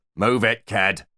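snarling tough-guy gangster voice. A character putting on a gangster act orders a companion along, snarling gangster act. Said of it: "he snarled quite convincingly".

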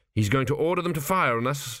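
plain reading voice

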